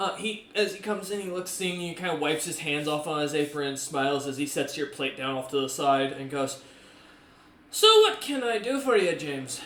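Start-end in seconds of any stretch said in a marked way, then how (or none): 7.7-9.6 put-on Irish accent, raised pitch, swooping. Voicing an old cook greeting james in character: irish accent. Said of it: "why am I going Irish tonight?".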